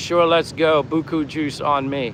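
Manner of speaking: ordinary talk, nothing marked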